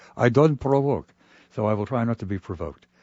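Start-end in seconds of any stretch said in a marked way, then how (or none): 0.2-1.1 put-on Russian-accented speech. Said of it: "he speaks with his Russian accent".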